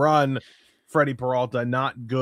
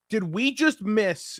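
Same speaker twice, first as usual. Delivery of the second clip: imitated loud speech, higher pitched; 9 semitones higher than usual. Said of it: "I said it really loudly".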